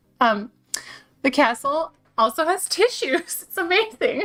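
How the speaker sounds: tearful voice. Reaching for a tissue while speaking, tearful and emotional. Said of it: "I need a tissue".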